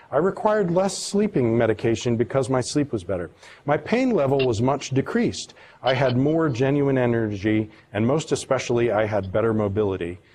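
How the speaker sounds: plain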